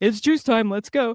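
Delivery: high pretend dog voice. Speaker voicing their dog while petting him in the morning: pretend dog voice. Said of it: "That's his pretend dog voice".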